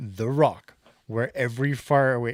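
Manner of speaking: deep, dark, dramatic movie-trailer narrator voice. Reading the golf course's tagline to Jeremy, in a deep, dark announcer voice. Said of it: "my deep, dark announcer's voice".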